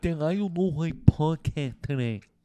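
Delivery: put-on muffled swollen-throat voice. Showing how the other man sounded with inflamed tonsils, imitating his tonsillitis voice. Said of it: "here's what he does".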